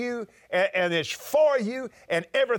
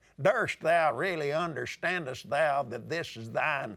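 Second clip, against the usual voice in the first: plain Texas accent throughout the delivery; 5 semitones lower, 4 dB quieter than usual. Imagining how an old-fashioned prayer sounds to god, in a texas accent. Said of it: "in a Texas accent".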